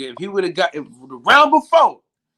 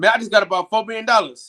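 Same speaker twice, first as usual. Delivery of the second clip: ordinary delivery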